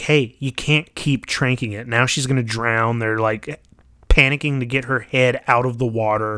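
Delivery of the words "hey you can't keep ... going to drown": plain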